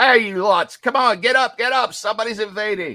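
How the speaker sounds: loud, high hollering from a distance. Narrator voicing someone heard from the north: shouting. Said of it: "you hear shouting from the north".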